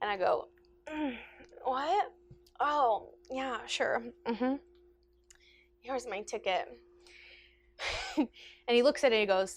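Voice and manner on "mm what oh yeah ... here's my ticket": acted, slow, groggy, just-woken voice. Retelling answering a conductor who pushed their shoulder, faking a just-woken reply. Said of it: "I just kind of like feigned napping".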